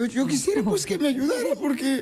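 voice breaking and cracking. A son asks for help meeting his father, voice breaking. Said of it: "perdón que se me corta la voz".

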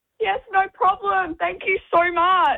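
scared, terrified, very high-pitched voice. A woman at her door thanks a visitor for a sticker, terrified. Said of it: "Sounds terrified".

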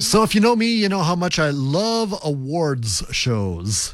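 put-on ironic delivery, meaning the opposite. Opening a talk to the audience, the speaker sounds sarcastic. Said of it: "he said sarcastically".

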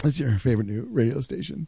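soft, sorrowful, downcast sad voice. Performing a line when asked to hear a sad voice: sad voice. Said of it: "Let's hear your sad".

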